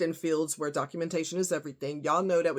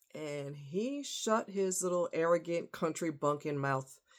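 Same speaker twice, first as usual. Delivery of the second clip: ordinary talk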